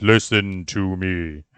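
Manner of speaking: loud, grand, omnipotent godlike gravitas. Teasing another speaker about their echoing sound: imitating Giz's omnipotent voice. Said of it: "a certain level of omnipotent gravitas that goes with your voice".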